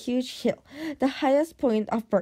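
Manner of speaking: ordinary delivery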